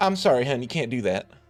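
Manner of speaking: feminine put-on Western accent. Game narrator voicing an attendant who stops a player, in a really feminine Western accent. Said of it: "really feminine sort of uh, Western accent".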